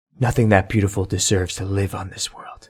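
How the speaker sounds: barely audible, very quiet whisper under the breath. A player voicing Winter, looking at the Kelpie, whispering under his breath. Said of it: "he's going to whisper under his breath".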